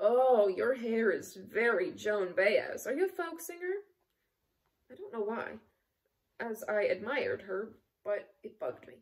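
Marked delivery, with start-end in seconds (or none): 0.0-3.7 raised, condescending, patronizing tone. Reading a memoir where the factory manager remarks on her hair, condescending. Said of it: "addressed me in a condescending voice".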